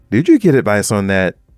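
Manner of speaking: snippy, loaded, pointed passive-aggressive tone. Showing how tone changes a question's meaning: pointed, passive-aggressive tone. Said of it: "if it said in this tone".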